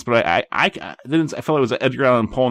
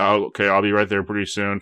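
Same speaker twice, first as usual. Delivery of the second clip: put-on robotic voice, pitched lower; 3 semitones lower than usual. Retelling a phone call while exhausted: imitating own robotic talking. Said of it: "I'm talking to her like a robot".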